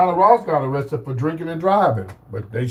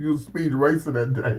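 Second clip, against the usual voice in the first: normal talking voice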